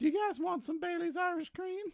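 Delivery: bad cartoon bear voice, pitched very high. Introducing himself as Winnie the Pooh: terrible Winnie the Pooh voice. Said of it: "It's terrible Winnie the Pooh".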